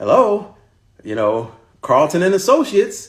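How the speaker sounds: unnatural, high, put-on work phone voice. Showing how one answers the phone at work: put-on work phone voice. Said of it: "put on a voice that wasn't your natural voice".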